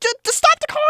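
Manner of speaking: loud high-pitched yelling.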